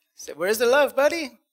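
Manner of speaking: put-on big, hearty, jolly Mexican accent, "love" drawn out. Recalling a college buddy's catchphrase, imitating Jerry's jolly Mexican accent. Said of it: "he would joke with this big jolly Mexican accent".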